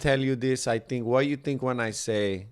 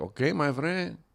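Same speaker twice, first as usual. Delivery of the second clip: put-on quintessential Mexican accent; 4 semitones higher, 3 dB quieter than usual. Retelling what a cab driver on the way to the airport said, put-on mexican accent. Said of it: "This guy had the quintessential Mexican accent".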